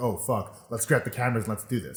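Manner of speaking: plain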